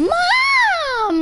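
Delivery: mock high, loud yell.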